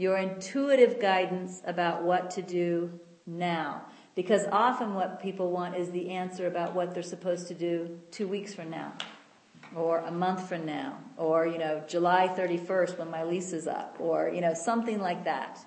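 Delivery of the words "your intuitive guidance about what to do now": very slow, deliberate, each word spaced out. Repeating a point to the audience a second time, very slow. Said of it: "I want to say that again very slowly".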